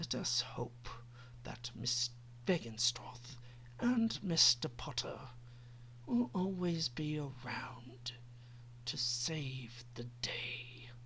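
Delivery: slow, menacing, contemptuous, deadly whisper. The narrator reads Lucius's reply to Dumbledore: deadly, contemptuous whisper. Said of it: "tapping his own cane on the ground as he looked at [name]. / tapping his own cane on the ground as he looked at [name]. / barely hiding his own contempt for the trio, / he said in a deadly whisper".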